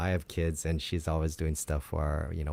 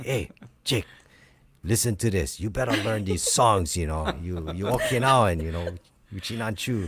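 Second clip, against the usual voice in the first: coaxing like an encouraging aunt; 4 semitones higher, 4 dB louder than usual. Retelling what an aunt would say when giving tapes: imitating Auntie Dot. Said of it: "was that a good impersonation of her?".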